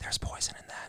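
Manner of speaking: soft, breathy whisper, barely voiced. Retelling a voice heard behind the head as a child: imitating a whisper. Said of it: "It sounded just like that".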